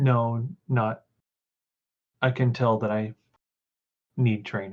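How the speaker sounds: quavering voice wobbling and trembling with fear. Acting out a man's reply when confronted; imitating a quavering voice. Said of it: "in this kind of quavering voice".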